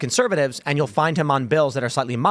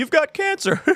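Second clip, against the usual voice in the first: put-on inappropriately laughing doctor voice; 12 semitones higher than usual. Retelling a cartoon doctor delivering bad news: imitating Doctor Hibbert's inappropriate laugh. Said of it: "he laughs inappropriately".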